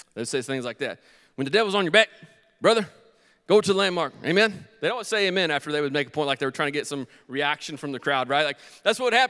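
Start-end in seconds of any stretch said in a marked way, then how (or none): 1.4-4.7 put-on southern-drawl preacher voice. Recalling the preachers of their childhood, the speaker quotes them in southern-drawl preacher voice. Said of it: "all the preachers that I grew up with had southern drawls".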